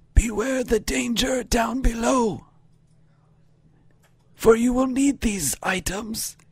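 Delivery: groggy, woozy, very high voice. Narrating to the players as she gets up and speaks, woozy. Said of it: "she gets up kind of woozy".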